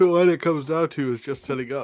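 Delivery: speaking through a yawn. Planning for tomorrow with the group late at night: yawning while talking. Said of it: "Sorry, that was a yawn".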